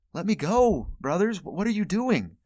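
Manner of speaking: acted, high-pitched anguished crying out. Narrating a kid in a pit calling out to his brothers, an anguished cry. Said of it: "hear him calling out in anguish".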